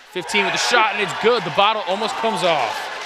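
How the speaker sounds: loud, high-pitched, excited shout.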